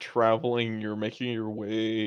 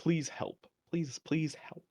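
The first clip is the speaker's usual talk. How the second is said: put-on soft, young-sounding, pleading whisper; 6 semitones higher, 7 dB quieter than usual. Voicing a telepathic voice calling to the travelers: young-sounding pleading voice. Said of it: "like, young sounding, and it just says".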